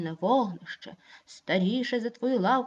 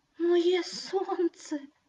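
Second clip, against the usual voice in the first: trembling, quavering voice, higher; 7 semitones higher than usual. Narrating a tale, one character echoes another's words: trembling voice. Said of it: "тремтячим голосом повторив".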